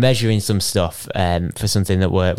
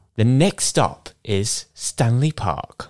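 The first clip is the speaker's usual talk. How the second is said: slow, recorded-sounding transit announcer voice; 3 semitones higher than usual. Prompted by a co-speaker to announce the next stop: tube announcer voice. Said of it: "That was more of the tube woman".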